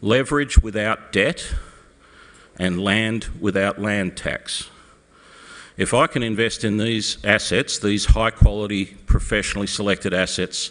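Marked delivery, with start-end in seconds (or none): 0.0-4.7 slow, deliberate, measured, spelled-out pacing. Explaining why they invest with homeowners, make the point land: slow, deliberate. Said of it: "I'll say this slowly so it sinks in".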